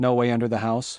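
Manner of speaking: ordinary delivery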